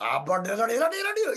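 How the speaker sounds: mock Indian English accent, put-on voice, gibberish.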